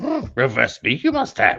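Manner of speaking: swooping, sing-song creature voice, pitch rising and falling. After admitting you just can't do it, try again with an attempted Yoda voice. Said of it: "you need to do the Yoda voice".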